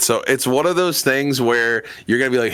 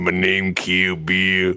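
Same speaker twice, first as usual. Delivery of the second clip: deliberate, slow, drawn-out catchphrase voice; 4 semitones lower than usual. Retelling what friend Gino would say: imitating friend Gino. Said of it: "who would just be".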